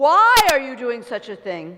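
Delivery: loud, booming, commanding royal voice. Telling a story, the prince questions a fisherman in a put-on commanding king voice. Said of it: "in his most commanding, princely majesty king voice".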